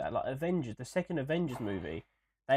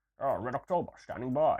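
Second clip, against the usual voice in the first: put-on Scottish accent. Speaker spoofing Sean Connery playing a Russian in Red October; Sean Connery impression. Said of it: "I still sound Scottish".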